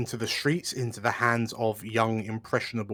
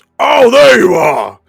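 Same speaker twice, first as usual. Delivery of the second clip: shouted, much louder, higher, slower; 8 semitones higher, 18 dB louder than usual. Game narrator voicing an old dwarf who spots the players, shouting. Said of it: "he shouts".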